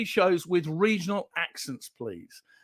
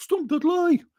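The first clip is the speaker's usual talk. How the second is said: put-on West Midlands accent, pitched very high; 11 semitones higher than usual. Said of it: "without doing a West Midlands accent".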